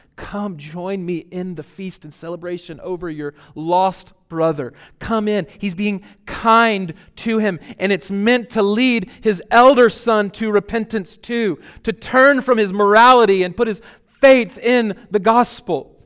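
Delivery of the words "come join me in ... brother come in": plain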